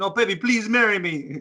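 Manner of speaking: put-on New Zealand accent. Acting out the other speaker proposing by phone: put-on Kiwi accent. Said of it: "you've got the Kiwi accent".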